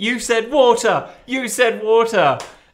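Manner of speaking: high-pitched mock shouting, same words twice. Recalling a hilarious opening disagreement, acting out one person's side by imitating someone shouting. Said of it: "Ricky just shouting".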